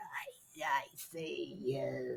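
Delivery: eerie, creepy, low ghost voice, very drawn out. Retelling what the ghost box said: imitating a creepy ghost-box voice. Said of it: "But it was in a really creepy voice".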